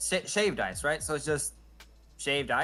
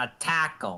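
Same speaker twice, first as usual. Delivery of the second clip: imitated Brooklyn accent; 3 semitones lower than usual. Showing the other speaker how they just said a word, imitating a Brooklyn accent. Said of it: "you sounded like you had a Brooklyn accent".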